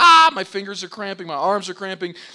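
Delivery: high, loud, anguished, pained scream. Recounting flying down a mountain on the last downhill, retelling screaming in pain. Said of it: "screaming out, like".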